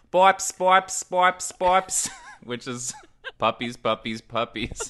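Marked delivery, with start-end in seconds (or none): 0.1-2.0 put-on thick Brazilian accent, loud, drawn out, calling out. Retelling how a Brazilian man called the puppies at feeding time: thick Brazilian accent. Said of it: "with his thick Brazilian accent starts saying".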